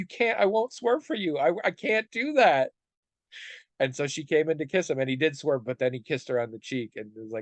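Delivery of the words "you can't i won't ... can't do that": mock very high, slow, drawn-out, on the verge of tears. Retelling a man's plea after a woman offers to demonstrate a kiss, imitating almost crying. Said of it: "and he's like almost crying".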